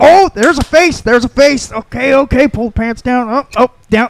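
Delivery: play-acted high, wildly hyper-animated running commentary. Retelling a comedian's joke about dial-up downloads: imitating a comedian, very animated. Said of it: "It's the most animated I've ever seen".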